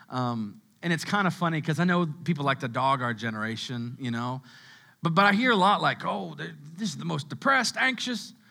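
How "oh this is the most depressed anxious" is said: Southern accent slipping in, put-on. Speaker mimics people who talk about their generation, in a put-on Southern accent. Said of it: "I get a Southern accent when I talk like that".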